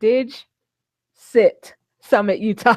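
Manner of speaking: very slow, deliberate delivery. Repeating the summit's name on the show, very slowly. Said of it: "I have to say that very slowly".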